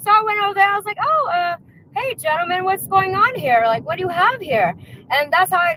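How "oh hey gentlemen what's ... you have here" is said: feigned innocent curiosity, acting unknowing. Retelling approaching some men, pretending not to know: feigned innocent curiosity. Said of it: "pretending to see what they're talking about".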